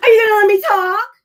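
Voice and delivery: frantic, shrill, unhinged shout, very high and very loud. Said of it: "You guys are unhinged".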